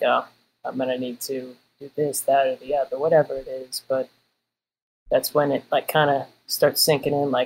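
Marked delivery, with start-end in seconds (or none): none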